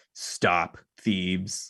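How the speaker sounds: flat, mechanical, machine-like robot monotone. Narrating a winged figure floating down on thieves, in a booming mechanical voice. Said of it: "this booming mechanical voice".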